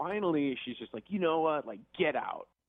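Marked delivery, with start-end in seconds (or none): 1.1-2.4 put-on angry, out-of-control outburst, higher. Retelling how she finally ordered him out: imitating someone angry and out of control. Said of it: "She was just out of control".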